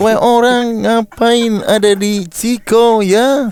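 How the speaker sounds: Indonesian with Dutch accent. Showing how a Dutch speaker would sound in Indonesian, Dutch accent. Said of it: "Minimal aksen Belanda aja".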